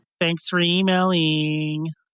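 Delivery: snippy, bitchy-sounding tone. Thanking a listener for emailing, bitchy tone. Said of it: "That sounded really bitchy".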